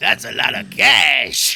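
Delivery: very loud, slow, rough booming voice. Answering a request to say it like Watto: Watto voice. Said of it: "Do it like Watto".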